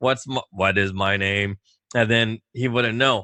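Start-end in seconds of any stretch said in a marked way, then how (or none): 0.0-1.6 put-on robot voice, lower and slower. Retelling going in to talk to him, in a robotic voice. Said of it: "I'd put on a robotic voice".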